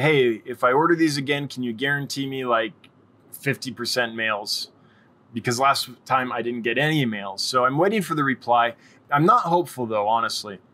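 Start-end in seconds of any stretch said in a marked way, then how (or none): none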